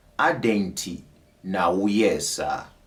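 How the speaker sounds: slowed right down, deliberate, word by word. Teaching a Twi phrase, repeating it once more: slowed down. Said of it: "let me slow it down".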